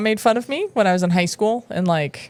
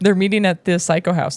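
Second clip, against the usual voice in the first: ordinary delivery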